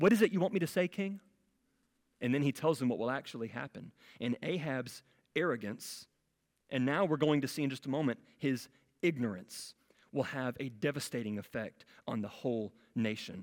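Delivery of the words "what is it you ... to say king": put-on mocking tone. Acting out a prophet mocking the king in scripture: imitating a mocking question. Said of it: "He's mocking the king".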